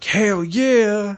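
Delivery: mock very high, loud, fired-up holler. Recounting how a man reacted to action scenes in a movie: retelling a yell. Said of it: "He'd yell it".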